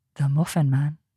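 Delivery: seductive, sultry delivery. Taking a turn at delivering the Muffin Man line, in a sexy, sultry voice. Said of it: "in a sexy, sultry voice".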